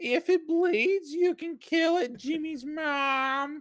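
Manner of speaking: very high, slow voice. Showing what can be done with a cartoon voice: Carl voice. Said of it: "I can do a lot of stuff with Carl's voice".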